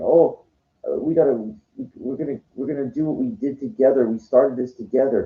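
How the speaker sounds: crying while forcing words out, tearful and stumbling. Retelling what Shalom said on running into a friend: imitating Shalom crying. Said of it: "Shalom started crying, like, saying".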